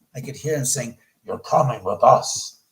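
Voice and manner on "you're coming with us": terrible, dread-filled, deep, loud menacing voice. Retelling his story of being dragged up by an unseen force: retelling a terrible voice. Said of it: "terrible voice".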